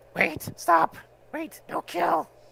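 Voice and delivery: very high, rough, raspy goblin shriek. Voicing a goblin boss who runs forward begging: shrieking goblin boss. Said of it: "shrieks and runs forward and says".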